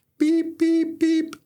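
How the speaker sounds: very high alarm beeps, like a smoke alarm. A speaker giving fire safety tips, doing a smoke alarm beeping impression. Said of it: "my best impersonation of a smoke alarm".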